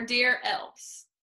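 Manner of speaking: ordinary delivery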